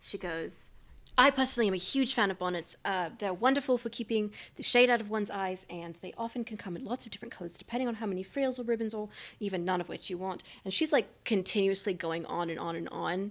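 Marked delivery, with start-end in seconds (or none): none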